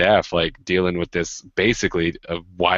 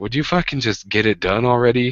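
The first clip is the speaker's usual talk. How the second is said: put-on impatient, exasperated tone, higher pitch; 5 semitones higher than usual. Describing how a teacher spoke while students were pushed around: imitating a teacher's impatient tone. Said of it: "the tone of voice that one of the teachers had was kind of just this like".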